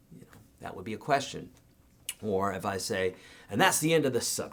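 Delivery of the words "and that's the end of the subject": downward closing pitch on the word "subject". Showing the voice inflection for ending a subject: falling end tone. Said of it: "and my note goes down".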